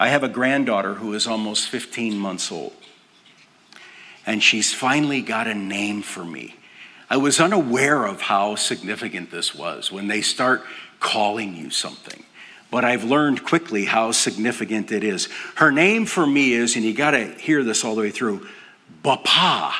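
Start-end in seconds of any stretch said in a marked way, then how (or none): 19.0-19.7 Bapa with heavy stress on second syllable. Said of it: "Big, heavy emphasis on the second syllable".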